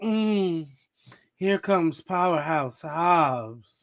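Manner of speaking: play-acted, very slow, admiring, spicy drawl. Teasing the other speaker about how he sounded, the speaker is imitating a spicy tone. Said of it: "sounded a little spicy".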